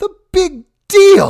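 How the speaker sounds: very high, very loud, shrill appalled, disgusted screech. Narrator reads a woman retorting to a dismissive man: almost screaming in disgust. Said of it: "the woman almost screamed in disgust".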